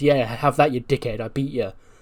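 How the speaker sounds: ordinary delivery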